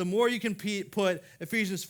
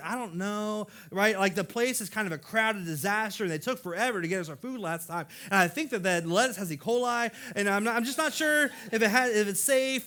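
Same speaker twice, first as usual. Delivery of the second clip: ordinary delivery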